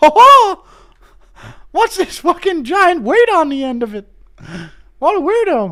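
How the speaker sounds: very high-pitched cartoon mouse voice. Doing a requested Mickey Mouse impression measuring something: Mickey Mouse voice. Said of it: "Impression of Mickey Mouse".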